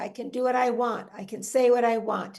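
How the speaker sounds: ordinary talk, nothing marked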